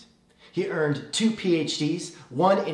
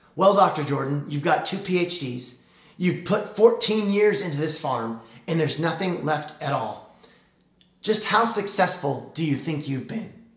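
lofty, superior, haughty, needling tone. Retelling how a reporter questioned a farm owner, in a mock-haughty voice. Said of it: "the reporter said in a haughty voice".

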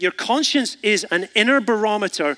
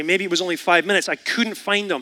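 ordinary talk

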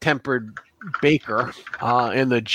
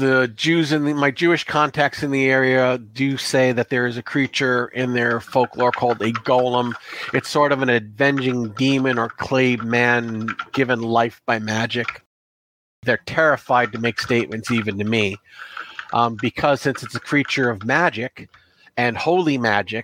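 ordinary delivery

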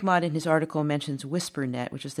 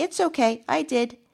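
put-on tiny, very high, slow, drawn-out child voice; 10 semitones higher, 3 dB louder than usual. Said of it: "this little voice from the back of the van said".

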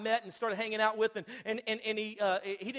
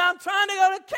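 very high-pitched, loud yell; 10 semitones higher, 11 dB louder than usual. Retelling arguing with a voice-activated GPS on the highway, retelling yelling at GPS. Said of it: "I'm yelling at this thing".

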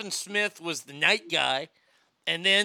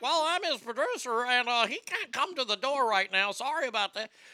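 wild, crazy fake voice, pitched high; 6 semitones higher, 3 dB quieter than usual. Retelling answering a woman at the door, posing as the producer, crazy fake voice. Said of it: "I do like some kind of crazy fake voice".

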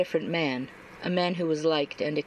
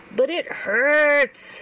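very high, loud, whiny voice; 10 semitones higher, 7 dB louder than usual. An injured man pulls his hurt hand away from someone trying to examine it; whining. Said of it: "Neil whined".

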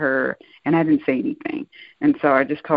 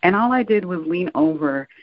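ordinary talk

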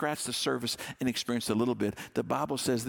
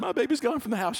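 mock tearful sobbing, higher and louder; 10 semitones higher, 4 dB louder than usual. Retelling a mom's introduction at an empty-nester group: imitating a mom crying. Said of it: "and she'd cry".

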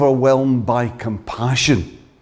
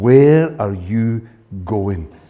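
put-on exasperated tone, lower pitch; 4 semitones lower than usual. Describing what she never says to him, voicing it in a mock-exasperated tone. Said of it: "she never says to me in an exasperated tone".

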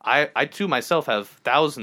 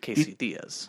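fast whisper, words blurred and run together; 6 dB quieter than usual. Showing how a name sounds when said fast, quick run-together Casey Diaz. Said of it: "if I say it quickly".

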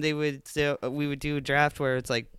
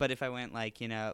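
ordinary delivery

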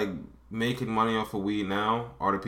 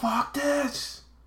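sudden snapping yelled outburst, pitched way up. Acting out how the dad yells at the aunt: imitating the dad yelling. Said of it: "every once in a while he'll snap and he'll yell".

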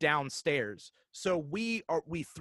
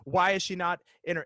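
ordinary delivery

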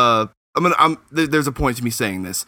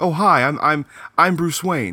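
high-pitched, very slow, easy voice. Comparing Batman and Bruce Wayne voices in the animated series, higher, normal Bruce Wayne voice. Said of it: "he makes it more high-pitched and normal".

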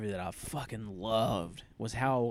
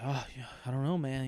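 mock deadpan, flat, quiet, with no feeling; 6 dB quieter than usual. Retelling a movie character's line on finding his dad: imitating John's flat delivery. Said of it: "wish you had a little more emotion in your voice".

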